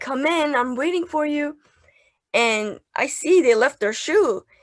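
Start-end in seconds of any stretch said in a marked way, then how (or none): 0.0-1.6 scream called out but kept contained. Retelling calling guests into the room while waiting: retelling a scream. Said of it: "I'm screaming".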